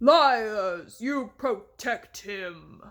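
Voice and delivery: slow, loud, growling giant voice. Reading a story, the giant answers Charming: giant's growl. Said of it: "the giant growled".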